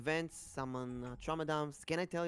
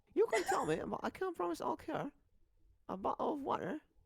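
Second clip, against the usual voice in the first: put-on British accent with a sing-song lilt; 12 semitones higher than usual. Repeating a personal favorite line: put-on british accent. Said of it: "I gotta say it in British".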